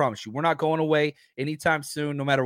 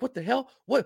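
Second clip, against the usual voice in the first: put-on angry, high-pitched, blurted outburst; 8 semitones higher than usual. Retelling the moment the game broadcast was changed: imitating own angry outburst. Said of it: "and I'm all pissed off".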